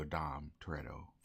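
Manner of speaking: plain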